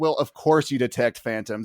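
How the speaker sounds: plain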